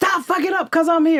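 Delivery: mock high-pitched shrieked yell. Retelling how Lee screamed from the set: imitating Lee screaming. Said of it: "he screamed out".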